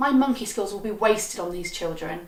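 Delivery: normal talking voice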